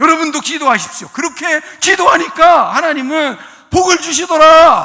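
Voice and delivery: loud, fiery preaching shout. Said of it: "막 이런 설교를 한 적이 있어요".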